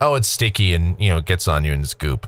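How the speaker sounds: ordinary delivery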